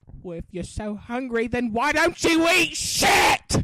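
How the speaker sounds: very loud, shrill, cutting scolding yell. Reenacting a scene, answering the hungry child: reenacting the mother's reply. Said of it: "I can reenact that scene for you".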